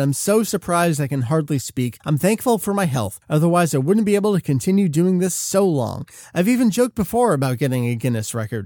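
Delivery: ordinary delivery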